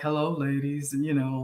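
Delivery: voice dropped way down low.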